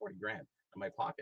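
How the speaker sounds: plain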